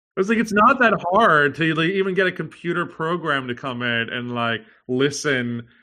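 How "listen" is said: slow, ironic, drawled listen, as if air-quoted. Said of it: "I'm saying that in air quotes".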